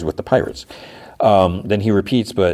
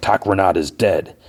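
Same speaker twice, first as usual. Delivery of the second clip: put-on growl. Retelling a performance with a murmuring crowd, growling as Captain Brutus. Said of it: "Captain Brutus growls".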